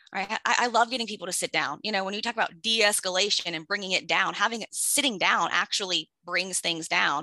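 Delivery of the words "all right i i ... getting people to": ordinary delivery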